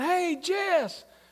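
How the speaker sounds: loud call projected across a distance. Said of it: "people from across the street were yelling".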